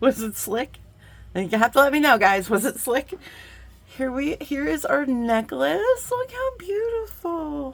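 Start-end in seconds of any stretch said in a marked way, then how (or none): 4.0-7.7 cutesy, high, slow put-on baby talk. Host back from a break, showing the necklace to viewers; annoying baby voice. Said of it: "that was an annoying baby voice".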